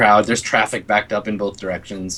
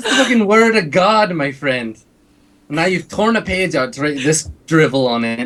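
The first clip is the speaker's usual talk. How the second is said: high, indignant put-on character voice. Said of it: "and he's like".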